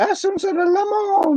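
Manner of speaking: put-on old Italian man's falsetto, very high pitched. Retelling how an old Italian man talked: imitating his falsetto. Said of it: "like a falsetto voice".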